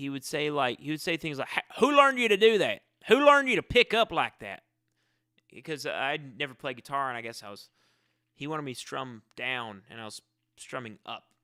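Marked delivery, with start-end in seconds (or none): 1.8-4.6 frightening bark, very high and very loud. Recalling someone who scared them while learning guitar: imitating a scary man yelling. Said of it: "he spoke in a way".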